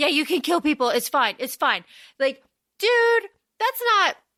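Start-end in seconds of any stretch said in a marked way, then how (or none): none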